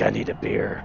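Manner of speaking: put-on gruff old soldier voice. Describing how a man always talks, demonstrating his grizzled war veteran voice. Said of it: "grizzled, like, war veteran voice".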